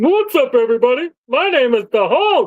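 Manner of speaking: high, goofy puppet voice. Mocking a friend's Hulk review, in a Sesame Street-sounding Hulk voice. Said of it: "Why does he sound like a Sesame Street character?".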